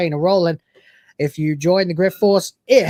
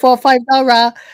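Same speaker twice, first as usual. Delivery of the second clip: way too loud, high-pitched digital robot voice. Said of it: "way too loudest digital Asia voice".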